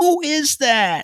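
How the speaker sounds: put-on very high, very loud old woman's voice. Retelling hearing a strange voice while sitting silent with a friend: old lady voice. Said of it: "That's just old lady voice".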